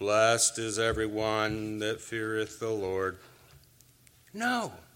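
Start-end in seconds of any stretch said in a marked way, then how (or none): 0.0-3.2 level, somber, analytical monotone. Showing how not to read the psalm verse: Ben Stein analytical somber monotone. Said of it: "Don't read it like Ben Stein might".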